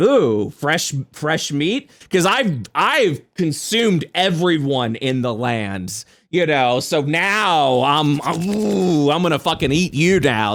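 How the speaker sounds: feral vampire monster voice, "now" drawn out. Describing a feral, starving Strahd hunting for prey: voicing Strahd as a feral Nosferatu. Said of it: "He's like".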